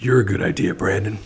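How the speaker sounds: deep, creepy, hushed voice-over-style delivery. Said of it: "Was that Batman or Bane or deep".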